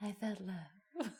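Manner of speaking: soft, slow, awkward sexy murmur.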